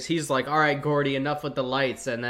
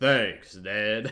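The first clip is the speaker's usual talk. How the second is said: put-on girl's voice dropped very deep and low; 4 semitones lower than usual. Retelling what a girl says to Ned: imitating a deep-voiced girl. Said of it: "the deep voice girl who's like".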